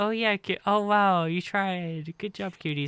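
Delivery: put-on high-pitched, patronizing, condescending tone. Acting out praise for the C tier: condescending put-on praise. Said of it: "it's a little bit condescending".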